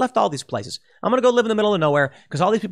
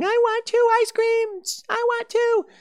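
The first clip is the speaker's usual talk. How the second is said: put-on child tantrum screaming, much higher. Describing a kid's temper tantrum, imitating the screaming kid. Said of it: "a kid who's having a temper tantrum screaming".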